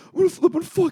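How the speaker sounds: shrill, very high, rowdy screaming yell. Recalling walking around together, the speaker retells the listener's yelling. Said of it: "You're just yelling".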